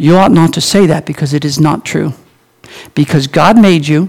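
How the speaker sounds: very gentle, soft-spoken delivery. Retelling the reply to someone who said they were too dumb: retelling a very gentle reply. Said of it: "I very gently said".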